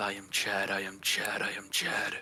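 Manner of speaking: muttered under the breath. Narrating a scene, voice a man muttering under his breath. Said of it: "muttering under his breath".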